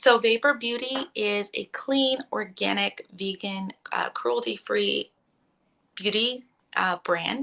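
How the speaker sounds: slow, stumbling, tripping over the words. A reviewer presenting a beauty brand's lip balm, stumbling over words. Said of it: "I'm like stuttering over my words".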